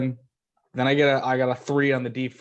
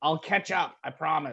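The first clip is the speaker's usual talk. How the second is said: shouting, higher; 3 semitones higher, 6 dB quieter than usual. Playing a character who yells to the group to run: yelling to the group. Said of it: "like a free action to yell to the group".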